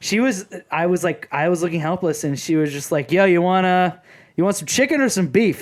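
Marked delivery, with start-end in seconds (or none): 3.1-5.6 put-on casual, tossed-off, sing-song Yankee accent. Retelling a cashier offering chicken or beef: imitating a cashier's accent. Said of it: "Like, with an accent".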